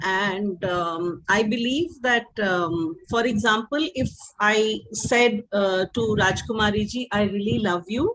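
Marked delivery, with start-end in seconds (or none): 7.1-8.1 very sweet, nice tone, said quickly. Demonstrating how tone changes meaning, saying a line to a listener: very nicely. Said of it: "and I say that very nicely".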